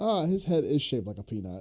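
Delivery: ordinary delivery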